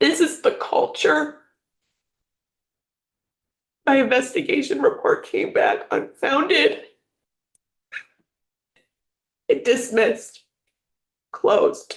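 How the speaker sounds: tearful and angry. Telling about suspected surveillance, crying in anger. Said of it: "I'm crying because I'm pissed".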